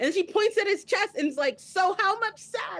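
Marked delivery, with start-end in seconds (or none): 1.6-2.8 put-on, pointed, accusing, slow and angry. Retelling how she points at his chest: imitating an angry accusation. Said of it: "she's angry".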